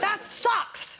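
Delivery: high, blunt director bark.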